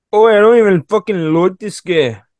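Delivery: clumsy fake Australian accent, high. Quoting an annoying woman named Haley, in a Haley horrible Australian accent. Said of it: "That's my horrible Australian accent".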